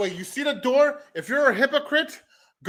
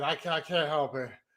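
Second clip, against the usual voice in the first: talking through a fit of giggles; 9 semitones lower, 11 dB quieter than usual. Explaining they cannot stop, laughing while talking. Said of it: "I got the giggles again".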